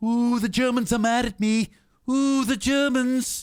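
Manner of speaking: very high, squeaky, squeezed-up cartoon voice. Recalling a cartoon clip: Mr. Burns voice. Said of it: "Remember that Mister Burns clip?".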